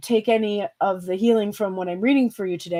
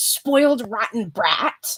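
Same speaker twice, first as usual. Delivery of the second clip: put-on nagging shrewish voice; 2 semitones higher than usual. Recalling what their mom and grandmother would say, mimicking a shrewish voice. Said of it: "in a shrewish voice".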